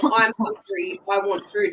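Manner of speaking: play-acted, slow, tearful, crying whine. Retelling a child sitting on the lounge asking for food: imitating a child crying. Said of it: "starts sitting there crying and going".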